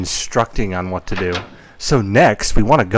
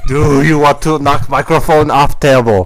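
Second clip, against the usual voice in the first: clumsy, bad fake Russian accent, raised voice; 6 semitones higher, 6 dB louder than usual. Attempting an accent that comes out russian: bad put-on russian accent. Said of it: "I'm very bad at accents. I turned Russian".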